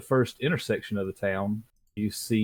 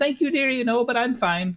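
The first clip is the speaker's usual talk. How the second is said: put-on cackling old woman voice, much higher pitch. Voicing an elderly pie-selling lady who turns to the players: cackling old lady voice. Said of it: "kind of cackles at you".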